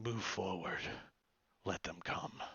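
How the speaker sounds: low, hushed whisper under the breath. After his loud call at the mouth of the caravan, he adds this in a little bit lower voice. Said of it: "in a little bit lower voice".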